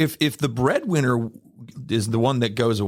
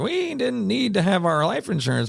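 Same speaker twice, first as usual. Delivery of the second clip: put-on bad, high, creaky, crackly old-lady voice; 8 semitones higher than usual. Recalling an older lady in a radio commercial, doing a terrible old lady impression. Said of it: "I'm going to do my old lady impression".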